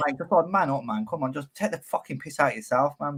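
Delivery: ordinary talk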